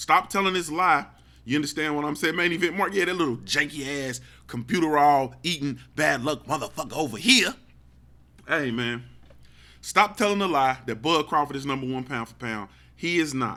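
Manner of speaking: ordinary talk, nothing marked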